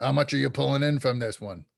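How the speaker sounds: deep gruff pixie voice. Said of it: "speaking with a deep, gruff voice".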